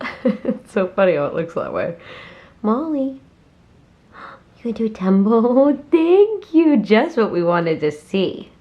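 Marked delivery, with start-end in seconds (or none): 2.6-6.8 annoying cat-owner voice used toward a pet. Talking to the cat Molly, annoying cat mom voice. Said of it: "Sorry for my annoying cat mom voice".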